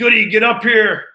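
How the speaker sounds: booming, very loud, high-pitched yell. Retelling a moment on the bus, imitating Kiefer yelling. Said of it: "Kiefer just yells back".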